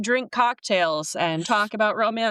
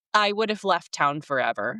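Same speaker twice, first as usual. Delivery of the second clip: ordinary talk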